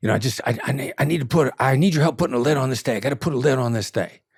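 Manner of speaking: play-acted frantic, panicky voice, tripping over the words. Retelling how a caller sounded on the phone: imitating a frantic caller. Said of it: "sounded super frantic".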